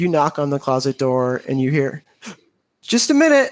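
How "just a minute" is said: muffled sobbing voice, higher. Voicing a character answering a knock from inside a closet: muffled sobbing voice. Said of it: "you hear this sobbing inside the closet".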